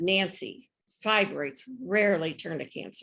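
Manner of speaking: put-on patronizing, dismissive, talking-down tone. Retelling a doctor's words about fibroids: imitating a condescending tone. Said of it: "condescendingly said".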